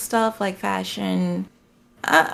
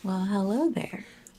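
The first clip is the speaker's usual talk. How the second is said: put-on sinister, creepy-sounding voice; 7 dB quieter than usual. Greeting the others at the start of a segment: put-on creepy voice. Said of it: "That sounded creepy".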